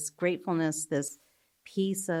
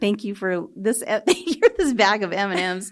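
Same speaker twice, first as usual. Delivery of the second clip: acted-out, very loud laughing throughout; 4 semitones higher, 9 dB louder than usual. Retelling thanks said for a bag of m and m's: retelling own words while laughing. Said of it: "I was laughing 'cause I'm like".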